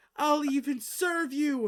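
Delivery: very high, loud, shrill, wailing, pleading sob. Game master voicing a woman begging the players, sobbing plea. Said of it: "She's just sobbing".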